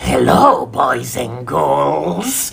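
bad horror-host voice, creaky, slow, croaked, "girls" stretched. Announcing an award winner, greeting everyone with a bad Crypt Keeper impression. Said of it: "I apologize for my terrible imitation".

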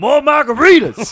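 booming, loud, shrill, high, demanding shout. Retelling a comedy bit about Al Pacino wanting margaritas: Al Pacino voice. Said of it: "in a Pacino voice".

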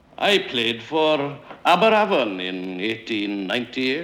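ordinary delivery

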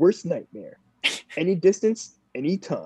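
put-on podcast announcer voice. Asked to go ahead and read a line for the podcast, trying a podcast voice. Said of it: "Is that like a good podcast voice?".

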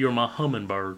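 put-on Southern accent. Quoting a movie line after praising an actor's accent: Nicolas Cage southern accent. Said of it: "I just like his southern accent".

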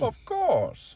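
very high-pitched movie-villain voice. Chatting with co-hosts, answering with a Bane impression. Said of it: "That was my Bane impression".

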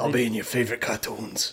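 menacing, sinister, threatening. Joking about quitting the podcast to be a voice actor, the host says goodbye, menacing. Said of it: "that sounded menacing".

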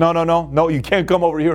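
usual speaking voice

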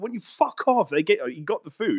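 put-on yelling. Recalling yelling at people filming themselves giving food to a homeless person: retelling shouting at someone. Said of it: "I was shouting at them".

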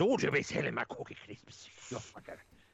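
put-on Irish accent. Recalling the Cookie Crisp cop mascot, the speaker quotes him in Officer Crumb's Irish accent. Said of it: "and then he had an Irish accent".

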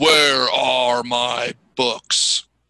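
loud, slow, drawn-out booming voice.

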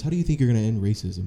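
plain

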